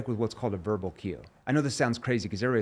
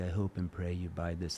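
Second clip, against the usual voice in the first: soft, timid, put-on meek little-boy voice; 5 semitones lower, 8 dB quieter than usual. Showing the wrong way to talk to a prospect: mock timid, like a little boy. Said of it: "talk timid like a little boy".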